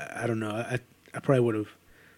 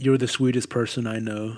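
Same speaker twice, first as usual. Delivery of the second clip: usual speaking voice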